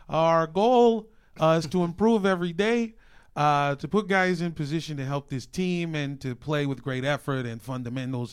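loud, exaggerated Chicago accent. Giving a quote in the 'Bears voice': exaggerated Chicago accent. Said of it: "in the Bears voice".

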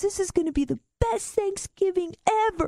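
put-on very high voice, crying with laughter. Retelling what a stoned guy said, imitating laughing so hard he cries. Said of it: "He starts laughing so hard he's crying".

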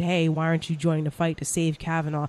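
plain

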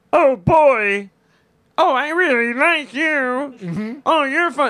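very slow diva puppet voice, every word drawn out. Showing that a voice alone is hard to place, a speaker demos: Miss Piggy voice. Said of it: "Then you know it's Miss Piggy".

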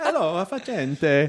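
slow, sing-song, exaggerated Italian accent.

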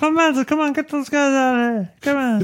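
cartoon frog puppet voice. Trying an impression of a young Don, addressing Clemenza, in a Kermit the Frog voice. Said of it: "It sounds like Kermit the Frog".

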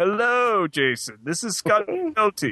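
drawn-out sing-song voice. Showing a pretend podcast done alone: impression of a fellow podcaster. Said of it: "do impressions of you guys".

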